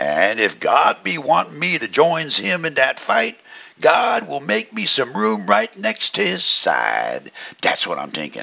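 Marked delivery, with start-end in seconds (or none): 0.0-7.3 put-on drawled, sing-song Cajun accent. Before dismissing class, the speaker quotes a man: drawling Bayou Cajun affect. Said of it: "in his best Bayou Thibodeau affect, drawled this".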